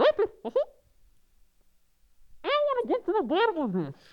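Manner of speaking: goes very high and squeaky, swooping. Staying in character as Mickey Mouse when asked, in a Mickey Mouse voice. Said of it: "Can you do it in his voice?".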